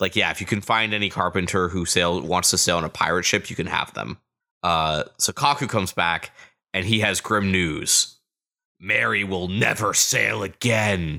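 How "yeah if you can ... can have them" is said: ordinary talk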